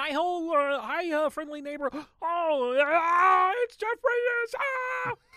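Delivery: very high, loud cartoon frog puppet voice. Greeting a visitor in a skit: Kermit the Frog voice. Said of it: "Kermit the Frog coming in".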